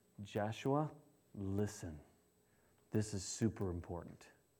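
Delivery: very quiet, low, grave and solemn voice. Retelling a scripture story as the angel addresses a man, very solemnly. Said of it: "The angel spoke very solemnly".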